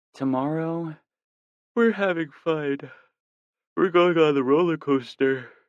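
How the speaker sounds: drowsy, sleepy voice, very high-pitched. Narrator reading her line as she rests against him, sleepy voice. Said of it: "she says in a sleepy voice".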